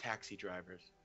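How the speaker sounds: barely audible, hushed, very quiet whisper. Passing a short remark in character to another player's character: whispering. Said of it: "I'll just whisper to Ollie".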